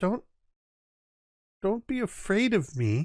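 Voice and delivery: put-on high voice like a child. Game master voicing a tentacled creature speaking into the players' minds, childlike voice. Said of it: "You all hear this childlike voice in your mind".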